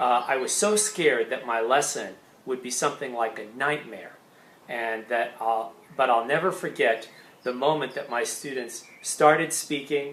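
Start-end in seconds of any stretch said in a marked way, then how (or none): none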